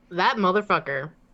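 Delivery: said right out, plainly and out loud. Voicing a character cursing a constable: cursing out loud. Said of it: "That's not under her breath".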